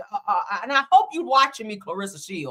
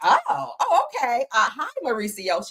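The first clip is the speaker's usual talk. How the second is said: slow, flustered, tongue-tied, flirty put-on voice; 3 semitones higher than usual. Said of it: "She was like that".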